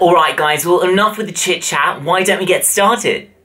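fake, put-on British accent. Opening a British candy tasting video in a put-on British accent. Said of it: "That was my British accent".

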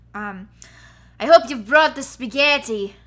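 put-on loud, belting girl's voice with Irish accent. Voicing Kate, the Irish girl, in a Mario picnic bit, Irish girl accent. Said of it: "I can't say spaghetti in an Irish accent".

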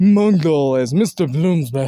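put-on cartoon character voice. Reading out a casting list, the speaker says one entry in a Mung voice. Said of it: "in my Mung voice".

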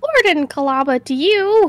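bad, poorly attempted old lady voice. Speaker plays Kalaba of the Pearl Clan, in a bad old lady voice. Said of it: "I can't do an old lady voice".

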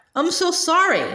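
tiny, small, high, faint voice. Naminé speaks to Donald, Goofy and Sora in a tiny voice. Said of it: "Only a tiny voice came out".

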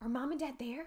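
whispering. Hidden behind a tree above voices in a theater, he asks, whispered. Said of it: "Josh whispered".

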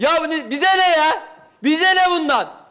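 high, loud shouting.

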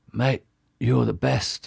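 soft, hurting half-whisper. A narrator reads the father's words to his son after surgery, half-whispering.

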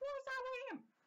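mock caring nurse voice, high and squeaky.

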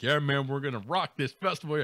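normal talking voice

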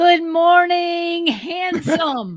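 very high, booming, house-filling bellow. Recalling his father at the bathroom mirror each morning: imitating father's bellow. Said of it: "he'd bellow throughout the whole house".

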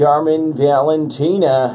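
radio announcer voice. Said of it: "I just kept doing this radio voice with your name".

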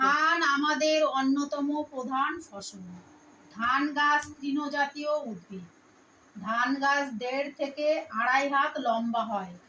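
slow, careful, dictation-style reading aloud.

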